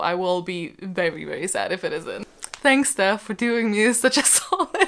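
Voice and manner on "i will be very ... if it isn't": low, soft, serious tone. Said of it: "seriously though".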